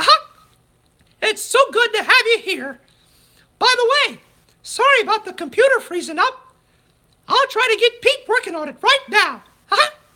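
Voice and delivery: very high, loud cartoon mouse voice, pitched way up. Saying goodbye to the Geeked Out Getaways guests in the Mickey voice. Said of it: "time to do the Mickey voice".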